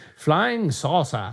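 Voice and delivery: clearly adopted, put-on British English accent. Two speakers joking about UFO terms: British accent. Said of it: "I say it in a British accent".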